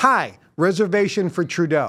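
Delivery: play-acted confident, friendly, decisive, pleasant tone. Showing how he gives his name to the woman seating him, slightly raised voice, smiling. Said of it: "I raise my voice a little bit. I say it with a smile".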